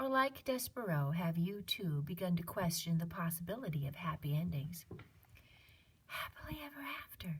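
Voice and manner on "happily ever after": very quiet, soft, high whisper. Narrator reading a character's words as a spool of thread stops: whisper. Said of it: "whispered Despereaux".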